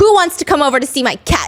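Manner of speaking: mock forceful, very aggressive, blunt, in-your-face delivery. Retelling a show contestant's sudden line, imitating an aggressive announcement. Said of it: "she very aggressively says".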